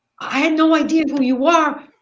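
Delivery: put-on very high, loud voice, almost crying. Retelling a driver who pulled up to apologize, imitating him almost crying. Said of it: "he's like almost crying".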